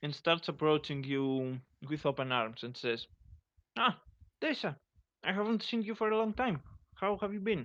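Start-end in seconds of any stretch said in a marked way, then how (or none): 3.8-7.7 character voice pitched very high. Narrator voicing a slim Rodian greeting Tessa with open arms: sounds like Dimitri from GTA 4. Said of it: "He sounds like Dimitri from GTA 4".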